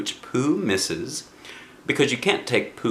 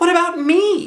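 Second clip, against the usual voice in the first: very high, loud, squeaky little voice; 8 dB louder than usual. Narrator reads Piglet asking the author a question: squeaky Piglet voice. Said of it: "said in his squeaky voice".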